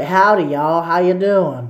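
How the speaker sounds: put-on Southern accent. Retelling how you greeted friendly strangers with a put-on accent. Put-on Southern accent. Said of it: "I put an accent on for them".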